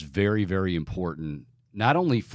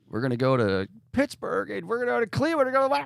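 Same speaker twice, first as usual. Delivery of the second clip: loud yell, pitched way up high; 14 semitones higher than usual. Comparing a coach's speech to an earlier one: Howard Dean scream impression. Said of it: "didn't it sound like Howard Dean".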